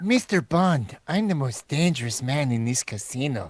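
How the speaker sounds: put-on lisping movie-actor voice. Addressing Mister Bond in a casino, speak in a lisping Peter Lorre voice. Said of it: "talk like Peter Lorre; I have a killer lisp".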